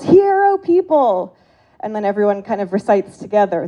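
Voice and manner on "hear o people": imitated loud yelling, higher pitch. Retelling how a loud camp counselor starts the morning: imitating a loud counselor yelling.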